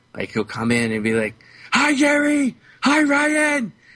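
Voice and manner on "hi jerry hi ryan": very high, very slow, drawn-out shout. Retelling how a kid greets workers in the store: imitating someone yelling a greeting. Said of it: "he's yelling at you even though he's just a foot away".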